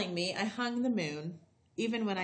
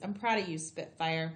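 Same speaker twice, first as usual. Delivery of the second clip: ordinary delivery, nothing marked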